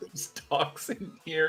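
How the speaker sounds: high-pitched, hushed, secretive little whisper. Retelling showing a suit jacket's lining to Sledge: imitating own whisper. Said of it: "in a whisper".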